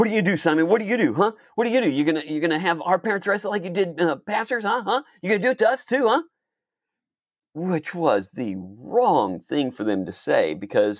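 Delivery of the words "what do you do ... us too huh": mock, very high, screaming, hounding yelled jeers. Retelling how two attackers got in his face: imitating bullies screaming.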